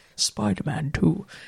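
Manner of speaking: movie trailer announcer voice. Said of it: "cinematic voice".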